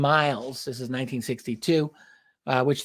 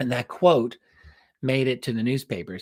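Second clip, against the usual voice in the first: ordinary talk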